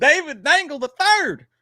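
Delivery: put-on country-style accent, very high and loud. During a podcast bit, the speaker announces a person's name: country voice. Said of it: "saying everyone's names in such a country voice".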